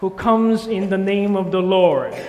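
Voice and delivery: loud proclaiming shout. Leading a congregation in repeating the crowd's cry: loud shouting voice. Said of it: "use your singing voice with me".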